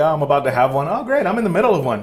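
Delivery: acted breezy, unbothered manner. Imitating people in trend videos talking about breakdowns: imitating a nonchalant tone. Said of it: "the way they say it is so nonchalant".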